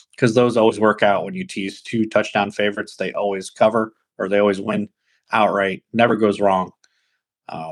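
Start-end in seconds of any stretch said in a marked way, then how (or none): none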